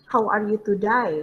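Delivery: ordinary talk, nothing marked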